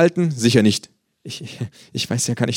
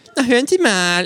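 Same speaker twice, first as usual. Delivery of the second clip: mocking mimicry in a very high voice; 10 semitones higher than usual. The kangaroo parrots a man's words back at him, mocking imitation of a man. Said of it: "äfft das Känguru ihn nach".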